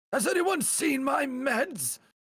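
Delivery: put-on very high-pitched, slow old man voice. Showing off a great old man voice in a playful bit: old man voice. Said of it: "he thinks I have a great old man voice".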